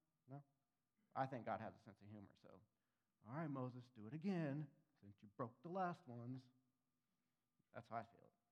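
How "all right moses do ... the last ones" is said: mildly sarcastic, fatherly tone. Picturing how God told Moses to redo the tablets: God, a little sarcastic like a dad. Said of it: "a little sarcastic".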